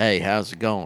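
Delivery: light, easy, mild Southern drawl. Showing what a mild Southern accent sounds like: mild Southern accent. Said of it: "I can do a mild Southern accent".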